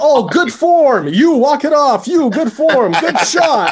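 loud, very high, very slow, swooping sports-parent cheering. Imitating a parent on the sidelines cheering for all the kids: imitating a cheering sports parent. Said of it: "one of those parents that's just cheering for all the kids".

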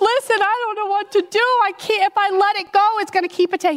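high, tearful crying voice. Retelling begging a tall man for help during a fox attack, retelling a crying plea. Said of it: "And I'm crying".

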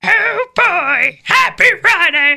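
very high, loud cartoon frog puppet voice. Given the stage and told which voice to do, answer in a Kermit the Frog voice. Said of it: "Just do Kermit the Frog".

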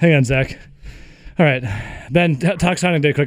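winded, breathless, puffing for air. Handing the topic to another speaker after dodging falling steel, out of breath. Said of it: "I got to catch my breath".

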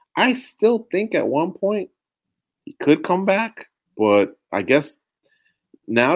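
cracking voice. Admitting doubt that he could come back, voice cracking. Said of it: "did you notice that little crack in my voice".

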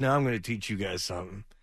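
usual speaking voice

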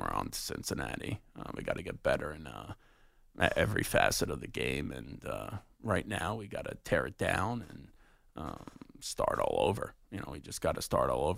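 hushed, breathy, murmured coach voice. Son shows how his dad should talk on the sideline: Belichick impression. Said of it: "when I do the whole Belichick impression".

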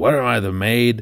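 put-on yelling, called out, complaining. Retelling his wife coming home and noticing dishes: imitating her yelling. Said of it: "kinda yells out".

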